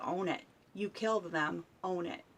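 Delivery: ordinary delivery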